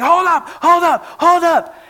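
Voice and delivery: very high, slow, drawn-out, in-your-face screaming. Retelling a viral video where a guy screams at another: imitating someone screaming. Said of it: "he's screaming in the face of this guy".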